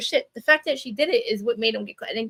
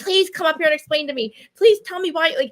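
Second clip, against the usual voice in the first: mock screaming, high pitched and loud; 5 semitones higher, 5 dB louder than usual. Speaker acts out what she screamed on her lives, retelling her own screaming. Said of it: "I was like screaming on my lives".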